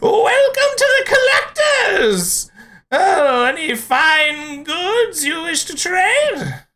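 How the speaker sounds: squeaky, very high, cackling gnome voice. Narrating a forest encounter, the speaker voices a strange gnome greeting the party: cackling. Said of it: "he cackles out to you".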